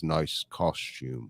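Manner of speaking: very quiet, slow delivery. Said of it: "very quietly says".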